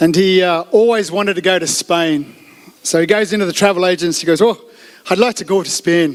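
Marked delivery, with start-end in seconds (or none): 4.4-6.1 clumsy, bad put-on Irish accent. Telling a Father's Day joke, voicing the Irishman at a travel agency, bad Irish accent. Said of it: "It's my bad accent".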